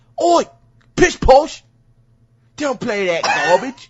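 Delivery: very high, very loud, shrill, drawn-out British parent cry. Joking that UK parents forbid Minecraft, imitating UK parents. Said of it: "their parents are like".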